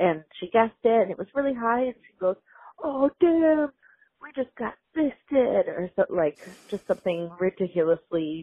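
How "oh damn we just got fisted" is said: very slow, high, very drawn-out holler. The speaker retells a coworker's vulgar outburst in the restaurant; retelling a coworker's yell. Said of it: "And she's like yelling like that".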